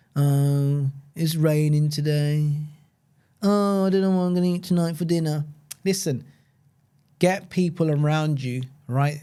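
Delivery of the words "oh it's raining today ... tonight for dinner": listless, lifeless, low-energy delivery. Mocking people who slouch at desks, imitating lifeless, no-energy speech. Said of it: "speak like this, no life in them".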